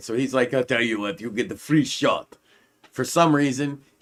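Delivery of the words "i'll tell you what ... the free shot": clumsy, really bad fake Eastern European accent. Retelling what a guy tells someone who keeps falling in the mud, bad Eastern European accent. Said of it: "he's Eastern European, but with a really bad accent".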